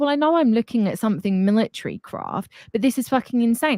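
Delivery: ordinary talk, nothing marked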